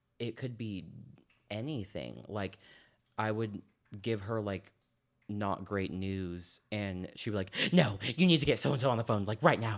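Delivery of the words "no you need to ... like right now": mock manic aggressive shouting, higher and louder. Giving an example of a person's outburst: imitating manic aggressive yelling. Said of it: "very manic and".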